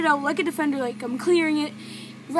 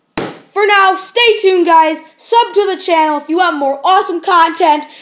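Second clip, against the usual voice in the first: very loud, raised shout; 2 semitones higher, 13 dB louder than usual. Ending a video, asking viewers to subscribe, shouting. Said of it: "I don't know why I'm shouting".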